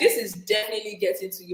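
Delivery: normal talking voice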